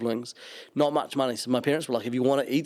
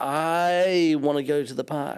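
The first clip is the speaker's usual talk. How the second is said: put-on drawn-out American accent of a child; 3 semitones higher than usual. Imitating a kid who grew up with Disney: drawn-out American accent. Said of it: "drawn out with an American accent".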